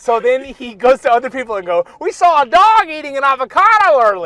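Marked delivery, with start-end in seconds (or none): 2.0-4.3 put-on Southern guy's accent, high and swooping. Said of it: "he's like this Southern kinda guy that talks like this".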